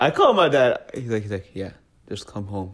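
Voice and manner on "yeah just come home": hushed, very quiet, dead-calm voice. Retelling a phone call to dad, imitating dad's calm voice. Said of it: "You got the calm voice?".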